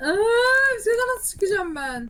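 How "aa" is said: high, loud, silly screaming screech. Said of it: "Mal mal çığlık atıyorsun".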